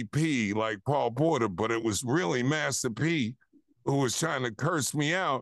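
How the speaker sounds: plain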